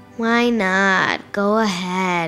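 lazily groaning. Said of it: "my dad lazily moaned".

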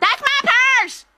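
shrill, very high, loud shouting. Showing another performer how to deliver the line, shouting it. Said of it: "Don't be afraid to shout it".

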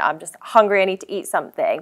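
usual speaking voice

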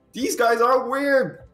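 very high, shrill, yelled shout. Voicing a passing traveler who shouts at the group: shouting as a character. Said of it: "he's gonna shout, like".

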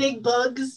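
loud yell in an acted character voice. Voicing a character yelling a warning while running to the kite: in-character yell.

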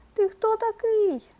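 very high, frightened, mouse-like squeak. Narrator reading a little mouse startled by an elephant, frightened squeak. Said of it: "мишка злякалася ... запищала".

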